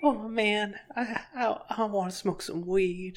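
soft acted cartoon voice. Comparing cartoon voices, the speaker shows how he thinks Tally sounds: Tally voice. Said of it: "I think Tally sounds like this".

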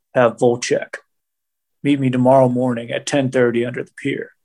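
real low, hard tough-guy growl. Retelling a TV scene where Ryan gives his bros an order, low growling Ryan voice. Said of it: "does the like real low growl Ryan hard ass voice".

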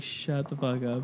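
angry hush, low, slow and soft. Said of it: "He's like".

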